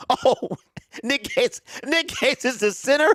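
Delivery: speaking through laughter. Reacting to surprising news, laughing while talking. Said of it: "I can't stop laughing now".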